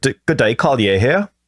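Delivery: put-on New Zealand accent. Showing how you try to do the accent of a man from new zealand, attempted new zealand accent. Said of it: "when I go to do a New Zealand accent".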